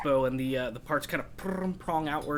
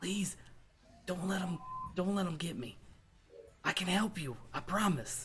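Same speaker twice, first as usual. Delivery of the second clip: soft, hushed, pleading half-whisper; 3 semitones higher, 7 dB quieter than usual. Narrator voices a character turning to the players, half-whispering. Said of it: "he kind of whispers".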